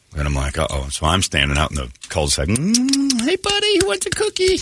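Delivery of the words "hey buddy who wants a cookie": put-on sweet, cutesy doggy voice. Calling a runaway dog from the cul-de-sac: sweet doggy voice. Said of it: "trying to be sweet, do the sweet doggy voice".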